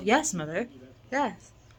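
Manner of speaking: normal talking voice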